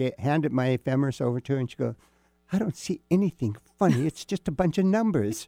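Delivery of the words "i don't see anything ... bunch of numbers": put-on very strong British accent with pitch raised up. Retelling what a passenger on a flight asked: very british accent. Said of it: "in this very British accent".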